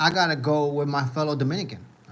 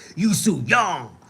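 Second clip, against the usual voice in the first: emphatic, forceful delivery from the gut; 4 dB louder than usual. Showing how a name must be said, forceful name, from the gut. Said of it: "you gotta say it with emphasis".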